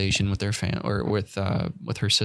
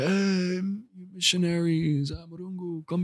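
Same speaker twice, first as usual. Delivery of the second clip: put-on drunken call, very high and drawn out; 9 semitones higher, 3 dB quieter than usual. Retelling how a drunk man outside called out: imitating a drunk man. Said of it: "a drunk guy outside and be like".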